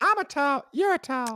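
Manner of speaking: very high, loud, cartoonish voice. Quoting the South Park source of the line: Towelie voice. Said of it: "it was from South Park".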